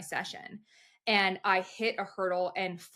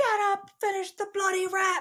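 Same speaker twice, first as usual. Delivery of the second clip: put-on high yelling, British accent; 12 semitones higher, 4 dB louder than usual. Retelling how he yelled at the speaker after a fall at practice, British accent yelling. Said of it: "yelling, cursing at me in his British accent".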